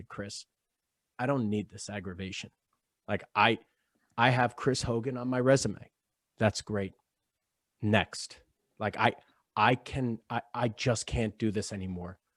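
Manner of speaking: soft, very calm, even-tempered, composed voice. Retelling telling someone off outside: retelling a very calm rebuke. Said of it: "very calmly".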